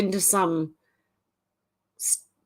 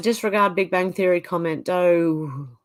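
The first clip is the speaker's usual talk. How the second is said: ordinary talk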